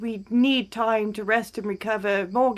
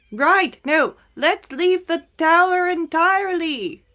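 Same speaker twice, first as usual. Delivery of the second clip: raised, projecting, pitched-up voice that carries; 8 semitones higher, 5 dB louder than usual. Voicing a character pretending to leave the tower: raised voice. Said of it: "she says with a raised voice".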